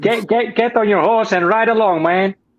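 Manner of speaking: American hillbilly accent, Texas style. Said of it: "try an American accent".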